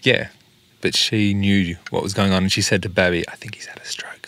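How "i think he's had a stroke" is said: whispered, hushed, breathy, barely audible aside. Quoting what she said to Babby, whispered. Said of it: "like that, you know, whispered it".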